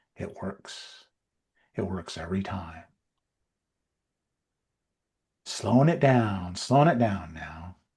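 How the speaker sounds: put-on late-night radio DJ voice. Discussing sales techniques on a show, demonstrating the slow late-night dj voice. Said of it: "it's the late night D J voice".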